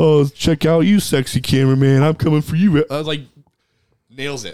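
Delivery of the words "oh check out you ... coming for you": odd, weird, ditzy airhead character voice. Recommending a show, the speaker acts out Sherry O'Terry in a ditzy weird Sherry O'Terry voice. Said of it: "has the weird voice".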